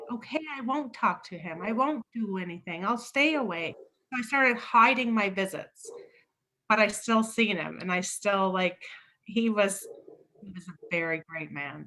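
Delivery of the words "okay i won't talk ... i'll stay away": mock tearful, crying, desperate begging. Retelling the day she packed her bags, re-enacting crying and begging her. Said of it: "Begging her, crying".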